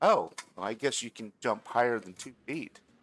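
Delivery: talking through little giggles, laughing through the words. Voicing a character who watches a player land softly, giggling while talking. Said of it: "she starts giggling".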